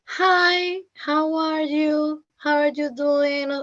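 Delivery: high, slow, dragged-out textbook language-tape delivery. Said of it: "American talking that slow".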